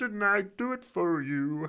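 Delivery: high frog puppet voice. Speaker tries impressions, warning it may go awful: Kermit the Frog voice. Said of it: "Kermit is like".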